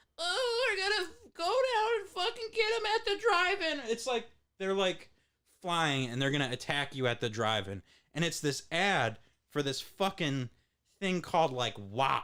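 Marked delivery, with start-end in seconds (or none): 0.2-3.9 very high, nasal little mosquito voice. Recalling an ad from childhood, the speaker imitates the mosquitoes: nasally high-pitched mosquito voice. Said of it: "nasally, high pitched voice like".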